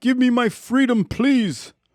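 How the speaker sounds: put-on very high, failed English accent. Podcaster voicing a mask from a screen-shared episode, in a bad english accent. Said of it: "I was trying to do an English accent".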